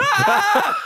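screaming. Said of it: "look at me and go".

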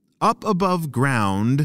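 plain reading voice

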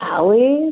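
rising, question-like intonation. Showing how he said a name in his sleep: rising questioning intonation. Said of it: "That sounded like a question mark".

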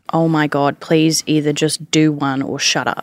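ordinary talk, nothing marked

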